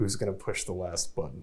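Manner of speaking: very quiet muttering under the breath. Walking a companion away from the group, asking under the breath. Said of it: "under my breath".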